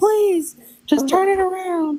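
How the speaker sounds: put-on shrill, very high screaming. Retelling what was yelled at a phone: imitating screaming at a phone. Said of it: "screaming at my phone".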